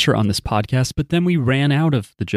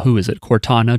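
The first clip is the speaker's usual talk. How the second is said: normal talking voice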